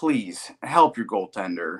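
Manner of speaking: put-on begging, pleading voice. Retelling watching a game with friends, retelling a plea. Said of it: "I was begging and pleading".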